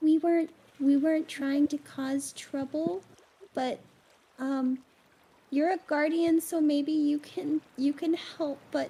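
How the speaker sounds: whispering crab voice. Voicing a little crab who asks a guardian for help: little crab whispering. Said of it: "the little crab whispers to you".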